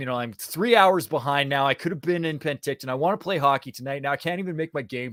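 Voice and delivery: natural Canadian accent. Recalling his thoughts getting back in his car after a callback, canadian accent. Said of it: "You sound like a Canadian".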